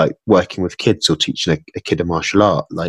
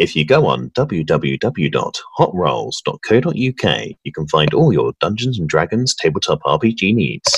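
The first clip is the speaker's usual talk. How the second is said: slow on-air presenter voice. A guest doing a cheeky plug for Hot Rolls, in a radio voice. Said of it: "That was my radio voice".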